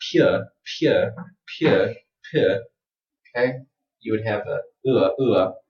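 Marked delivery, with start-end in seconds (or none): 0.1-2.6 British accent, pure pronounced with ua. Speaker contrasts word pronunciations for learners: British accent. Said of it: "if you say this in the British accent".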